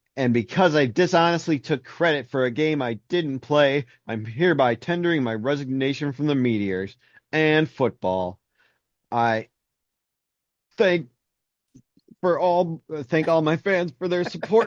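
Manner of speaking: put-on choked-up, very slow delivery. Reading out a character's resignation speech: mock choked-up emotion. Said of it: "getting all choked up".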